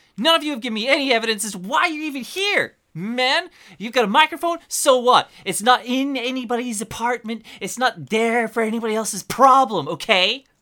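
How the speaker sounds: high, loud, squeaky nerd voice in rage. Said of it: "Squeaky little nerd ra-, rage".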